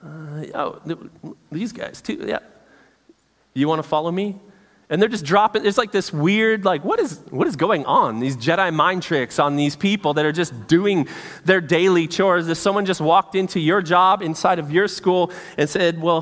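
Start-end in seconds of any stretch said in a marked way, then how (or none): 0.0-4.4 playful mock offhand voice, quieter. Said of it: "read this in a funny way".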